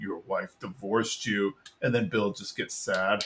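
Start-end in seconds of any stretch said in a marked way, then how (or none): 0.0-1.5 flat, stoic monotone with no feeling. Recapping a party scene, doing a kid's line in Dooley's monotone stoic voice. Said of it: "who has like the most monotone, stoic voice".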